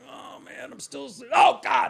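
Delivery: shrill, very high, panicked shouted freak-out. Recalling a prank on Fellhauer, voicing his reaction: imitating Fellhauer freaking out. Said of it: "he'd freak out".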